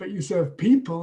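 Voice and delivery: strong contrastive stress on the word people. Teaching tonic stress with an example sentence: strong stress on 'people'. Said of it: "you can hear a strong emphasis on people because it's contrasting with animals".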